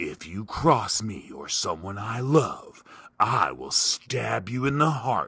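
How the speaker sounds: husky, announcer-style voiceover narration voice. Mocking an automated social media voiceover: imitating husky voiceover guy. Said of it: "it's the husky guy's voice".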